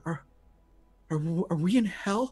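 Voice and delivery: trembling, tearful, stammering voice on edge of tears. Voicing a scared character with tears in her eyes: quivering, tearful voice. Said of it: "with a quivering voice".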